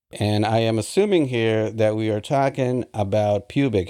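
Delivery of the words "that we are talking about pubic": ordinary talk, nothing marked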